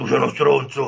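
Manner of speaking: throaty, rasping, guttural, rough demonic snarl. Retelling how a demon in a woman insulted them: guttural demon voice. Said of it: "insultarmi in una voce gutturale".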